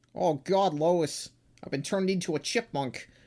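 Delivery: poorly done cartoon father voice. Joking about a comic's drawn eyelids: bad Peter Griffin impression. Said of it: "That's not a good Peter Griffin impression".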